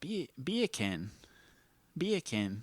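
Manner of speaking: very hushed, soft New Zealand accent. Testing a claim about how words sound in accents, New Zealand accent. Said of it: "I guess I'm doing more New Zealand".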